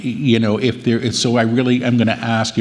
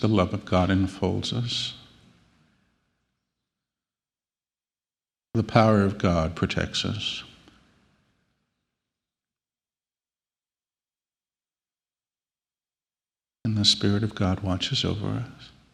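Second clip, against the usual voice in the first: very soft, much quieter whisper under the breath; 8 dB quieter than usual. Leading listeners in a repeat-after-me prayer, very soft, barely a whisper. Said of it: "Softer, please".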